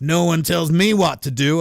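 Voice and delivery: put-on Missouri accent. Retelling a story, quoting a man's reply to Bo, McElroy in a Missouri accent. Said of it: "I think that's better".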